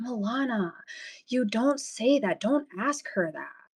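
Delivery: whispered under the breath. Retelling how Charlotte hit my arm and whispered: imitating Charlotte whispering. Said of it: "hits my arm and starts whispering".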